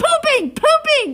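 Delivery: very high, loud, excited shout.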